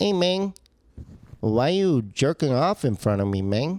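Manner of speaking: put-on, disapproving voice of a pet. Comedian working on a bit voicing his rescued pet from Mexico, put-on pet voice. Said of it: "So the voice I do".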